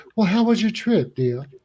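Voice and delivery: high, ladylike Southern belle voice. Telling a joke, one girl asks another about her trip: Southern belle voice. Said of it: "Southern Southern Belle".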